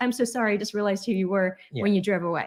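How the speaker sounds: plain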